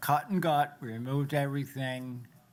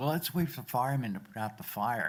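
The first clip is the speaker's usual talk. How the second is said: openly sarcastic delivery. Retelling the boss's answer at the burning building: imitating a sarcastic reply. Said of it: "Rather sarcastically".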